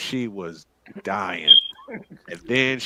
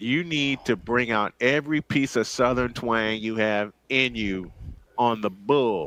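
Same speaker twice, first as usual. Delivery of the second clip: ordinary delivery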